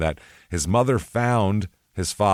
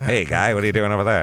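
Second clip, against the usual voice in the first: put-on old-time 1920s movie gangster voice. Imitating a man with a pencil-thin mustache flipping a nickel: 1920s gangster voice. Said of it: "Like he should be flipping a nickel somewhere".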